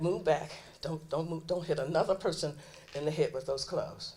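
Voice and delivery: ordinary talk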